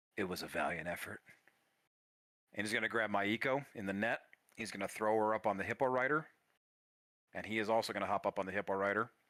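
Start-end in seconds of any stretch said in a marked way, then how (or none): 0.2-1.2 soft, hushed, breath-only half-whisper. Voicing a wounded fighter bending down to a player: half-whispering. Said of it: "he's gonna whisper to you".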